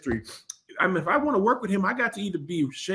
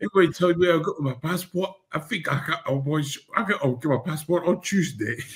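put-on British accent, mumbled, words piled together. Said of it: "You sound like a baby".

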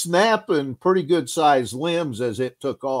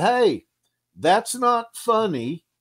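mock high, drawn-out hollered yell; 7 semitones higher than usual. Retelling a warning yelled toward the water: imitating own past yell. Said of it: "I yelled out".

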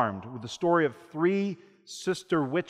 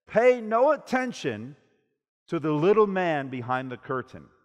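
ordinary talk

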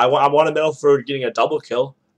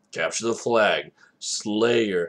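deep, deliberate announcer-style delivery; 5 semitones lower, 5 dB quieter than usual. Imitating the old Halo announcer calling game modes: serious deep Halo announcer voice. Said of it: "would be very serious with a deep voice".

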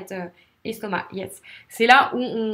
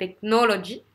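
technology with stress on second syllable nol. Explaining stress in four-syllable words, stress nol in technology. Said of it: "les mots à quatre syllabes, ça sera la deuxième syllabe qu'il faudra, sur laquelle il faudra insister".

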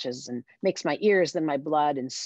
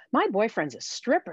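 proud, boastful, pitched-up delivery; 6 semitones higher than usual. Narrating a bartender motioning to a picture behind the bar, proudly. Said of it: "she says proudly".

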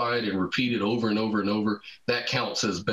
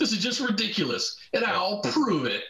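terrible put-on voice, pitched very high; 11 semitones higher than usual. Retelling a scientist setting out to disprove a theory: terrible impression of Eddington. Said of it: "That's a terrible impression".

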